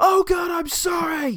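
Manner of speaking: put-on shrill, very high, very slow, drawn-out shout. Retelling a film scene where a caught character apologizes: imitating someone shouting. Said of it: "why are you shouting?".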